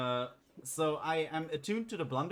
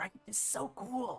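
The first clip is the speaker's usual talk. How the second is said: slow, high, half-whispered stage whisper; 7 semitones higher, 4 dB quieter than usual. Voicing a character showing off a sword to Rennie: half-whispering. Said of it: "whispering to Rennie".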